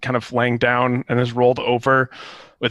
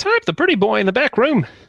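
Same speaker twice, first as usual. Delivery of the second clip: very high, thin, nasal creature voice; 11 semitones higher, 3 dB louder than usual. Voicing a startled Kenku telling the players something: thin, nasally voice. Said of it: "in a thin, nasally voice".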